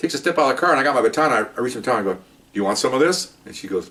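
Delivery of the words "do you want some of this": ordinary talk, nothing marked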